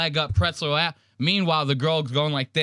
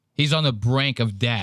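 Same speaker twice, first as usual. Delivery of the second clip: ordinary delivery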